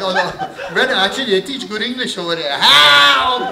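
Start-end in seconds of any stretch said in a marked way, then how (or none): 2.6-3.5 exaggerated, high, stretched-out Portuguese-style yell. Showing a player how to yell for help: exaggerated Portuguese style yell. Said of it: "You gotta go Portuguese style".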